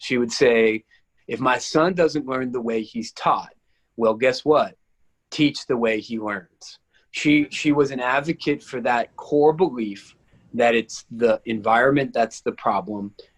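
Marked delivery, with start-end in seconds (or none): none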